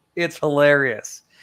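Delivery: ordinary delivery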